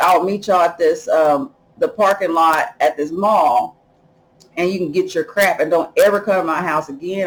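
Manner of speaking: plain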